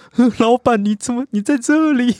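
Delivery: acted-out, very high, slow sobbing speech. Retelling a drunk man's words to the boss, imitating someone crying. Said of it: "他在哭着说".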